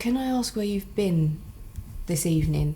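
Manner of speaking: discreet, understated, low-key tone. A player's character goes up to one of the women and asks quietly. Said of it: "goes up to one of the women just quietly and says".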